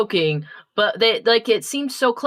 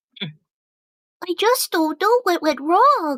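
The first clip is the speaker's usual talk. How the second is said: derpy, high-pitched cartoon voice; 7 semitones higher than usual. Asked to do a character voice quickly, saying a typical line, Derpy voice. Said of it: "derpy voice real quick".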